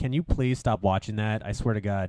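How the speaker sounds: usual speaking voice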